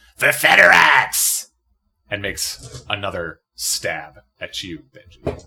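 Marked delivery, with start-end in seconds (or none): 0.2-1.5 ragged, raw, high-pitched battle scream. Voicing a wounded rat creature charging again at a player: screaming. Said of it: "and screams".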